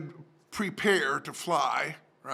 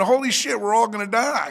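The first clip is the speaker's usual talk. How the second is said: terrified, panicked screaming outburst; 4 semitones higher, 8 dB louder than usual. Retelling jumping up on a landing plane: retelling a scream.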